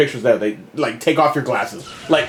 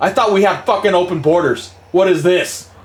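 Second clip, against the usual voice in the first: mock-furious angry man outburst; 3 semitones higher than usual. Retelling what a man said while leaving an airport counter, imitating an angry man. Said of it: "he was fucking mad".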